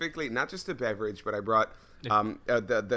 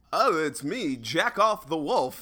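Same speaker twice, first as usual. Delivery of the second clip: announcer voice like a fifties radio DJ; 6 semitones higher, 4 dB louder than usual. Podcast hosts riffing on a fake radio DJ name, Wolfman Jack impression. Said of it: "like Wolfman Jack impersonation, like 50s radio".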